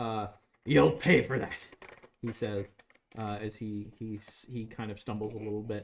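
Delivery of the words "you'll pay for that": loud, snarled delivery. A game narrator voicing a badly injured enemy still willing to fight, snarling. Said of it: "still willing to fight as he snarls".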